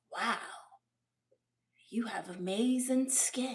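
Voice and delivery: creepy, leering voice. Showing how a compliment could come across creepy. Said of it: "if you say it creepy".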